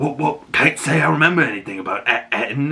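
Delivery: put-on pirate accent. Recapping a story, speaker quotes a character's reply, Shmi's pirate accent. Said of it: "he's got this great pirate accent".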